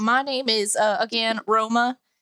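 Southern American accent slipping out. Introducing yourself by name again to listeners: southern accent. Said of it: "where did this southern accent come from?".

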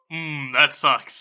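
smug, self-satisfied tone. A player's character sipping sweet water at someone's bad news: smug. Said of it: "real smug".

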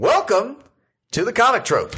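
very high circus-barker announcer voice. Starting an icebreaker on the show, the speaker uses a circus voice. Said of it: "You do kind of a circus voice".

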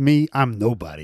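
put-on sinister delivery. Retelling a film scene where a stranger answers Dave: imitating a sinister voice. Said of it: "Very sinister".

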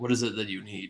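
gracious, well-mannered, very polite, courteous tone. Voicing a high priest answering the door to a visitor: very polite tone. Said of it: "asks in a very polite tone".

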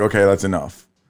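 ordinary delivery

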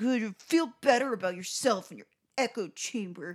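angry, grumbling man's voice. Retelling what an angry man said while leaving, imitating angry grumbling. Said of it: "He's like".

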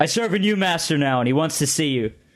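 high, energetic delivery, matching the energy, firing back. Voicing a character who matches a player's energy: yelling back. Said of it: "he matches your energy, yelling back".

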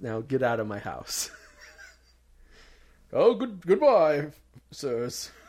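loud, swooping, put-on old-fashioned doctor voice. Playing a doctor after giving cootie shots, saying goodbye: old-timey doctor voice. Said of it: "I'm an old-timey doctor".

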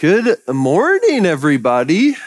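thick, broad Midwestern Minnesota accent. Greeting everybody at the start of the talk, in a thick Minnesotan accent. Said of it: "Morning in a very thick accent, Minnesotan".

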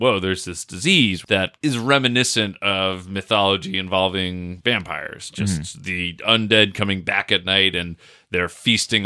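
ordinary delivery

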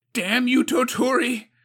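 high-pitched, shrill, loud yell. Narrator reads Suko's outburst at Tuturi, yelling. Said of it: "Suko yelled".

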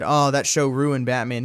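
ordinary talk

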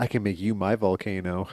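soft, hushed stage whisper, close up. Retelling a scene where one character half-whispers in another's ear: imitating a half-whisper. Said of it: "whispers in his ear".

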